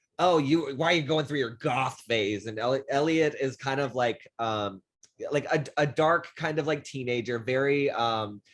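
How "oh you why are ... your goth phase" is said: mock jeering, teasing, mocking tone. Retelling characters teasing a moody teenager: imitating someone mocking. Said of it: "they start making fun of Elliot".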